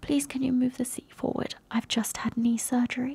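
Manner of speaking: timid, innocent soft voice. Retelling what an arrested woman said in the police car, mimicking a quiet meek voice. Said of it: "in this like such quiet, really meek, really innocent little voice".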